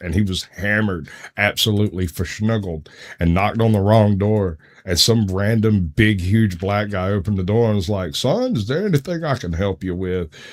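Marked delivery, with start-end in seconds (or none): 8.1-10.3 put-on cartoon rooster drawl, higher and quieter. Retelling a stranger opening the door, Foghorn Leghorn voice.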